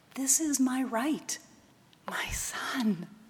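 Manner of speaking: soft, slow whisper under the breath. A mother answers her son as she holds him, soft whisper. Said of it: "she whispered softly".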